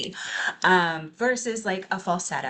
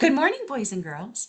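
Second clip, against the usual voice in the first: put-on high, swooping children's entertainer voice; 7 semitones higher than usual. Demonstrating a lively speaking style: children's entertainer voice.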